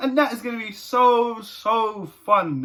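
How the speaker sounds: slow, heavily sarcastic, fake cheerful enthusiasm. Talking about the next match at home, being sarcastic. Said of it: "you can tell I'm being so, so sarcastic".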